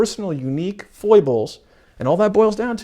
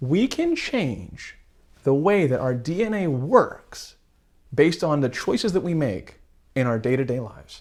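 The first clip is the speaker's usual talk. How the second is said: very slow, deliberate, each word weighed; 3 dB quieter than usual. Explaining epigenetics to listeners, the speaker delivers the key point very slowly. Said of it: "I'm going to say this so slowly".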